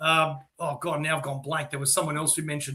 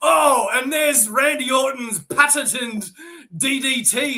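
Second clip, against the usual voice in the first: big, loud and slow delivery; 9 semitones higher, 6 dB louder than usual. Retelling a commentator's call of a move: imitating Michael Cole. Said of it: "he goes".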